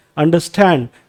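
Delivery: "stand" syllable of "understand" stressed. Explaining stress in compound words, stress on stand in understand. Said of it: "तो यहां पे stand पे जो है वो स्ट्रेस आ रहा है।".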